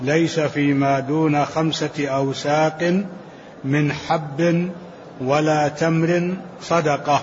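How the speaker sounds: ordinary talk, nothing marked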